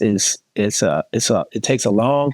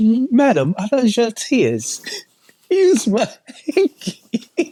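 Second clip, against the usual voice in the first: put-on South London accent, higher pitch; 12 semitones higher than usual. Acting out offering a hanky to a crying woman: put-on South London accent. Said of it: "Now you sound like you from South London".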